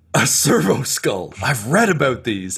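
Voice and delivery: put-on slow, awed, childlike excited delight. Voicing a character spotting a servo skull: excited like a kid. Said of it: "looks at it like a kid at a toy store".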